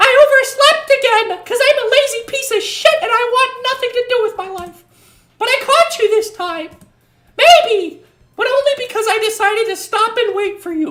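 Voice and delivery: very high, squeaky, loud cartoon voice. Doing the voices for a female game character while playing: Mickey Mouse voice. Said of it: "I'm turning her into like Mickey Mouse".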